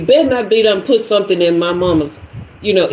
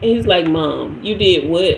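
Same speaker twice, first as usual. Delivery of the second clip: normal talking voice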